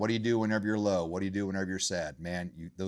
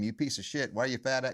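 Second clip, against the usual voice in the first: high, barking drill sergeant voice; 5 semitones higher than usual. Acting out the critical voice in their own head, drill sergeant voice. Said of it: "that drill sergeant voice".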